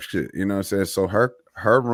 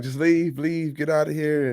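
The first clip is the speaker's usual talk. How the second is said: mock weeping, tearful, crying, pleading outburst; 6 semitones higher than usual. Retelling a girl's argument with her mom, imitating someone crying. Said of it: "so she's like crying".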